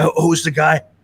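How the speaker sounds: ordinary delivery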